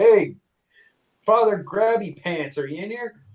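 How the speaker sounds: high, carrying shout, thrown out wide. Opening an unlocked church door and calling for someone inside, yelling out. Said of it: "I yell out".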